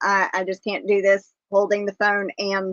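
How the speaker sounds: ordinary talk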